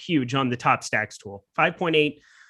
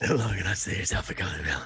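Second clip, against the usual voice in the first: put-on hoarse superhero voice, lower and quieter; 8 semitones lower, 5 dB quieter than usual.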